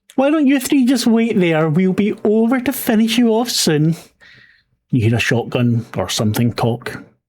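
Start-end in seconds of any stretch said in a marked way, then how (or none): 0.2-4.0 very high-pitched voice. A narrator voices one of the figures behind the three, high voice. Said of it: "The voice is high".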